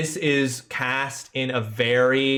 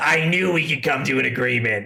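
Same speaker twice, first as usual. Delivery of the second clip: goblin character voice. Voicing the goblin Rollick as he shakes a player's spat-on hand: voicing the goblin Rollick. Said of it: "Rollick, uh, sees spit in his, he's like".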